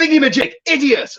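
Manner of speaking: mock very high, loud, mean shout. Retelling how the captain shouts for a tool: imitating Johnny shouting. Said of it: "It's like shouting at you".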